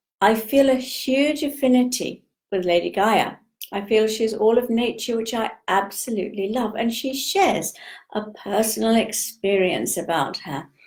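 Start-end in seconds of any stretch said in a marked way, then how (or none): none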